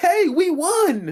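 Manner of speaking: put-on very high, shrill, loud, carrying holler. Recounting how she turned to the next person, retelling a yell. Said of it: "just as loud yells".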